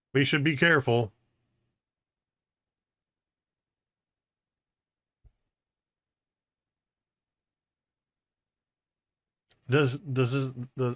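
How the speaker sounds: stuttering, tripping over opening words, stumbling restart. Speaking during a roleplay and tripping on a word, stuttering. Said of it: "that was me stuttering".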